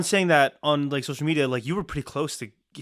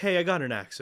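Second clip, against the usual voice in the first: usual speaking voice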